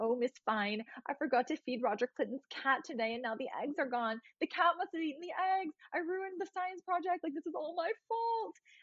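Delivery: put-on super anxious, worked-up, high, rising voice. Retelling a TV episode where a character rushes in to Miss Fine, imitating anxious Mr. Sheffield. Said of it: "he's like super anxious because he's like".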